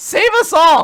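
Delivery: high, loud, panicked pleading voice.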